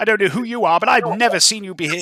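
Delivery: high, loud, indignant, haughty lady voice.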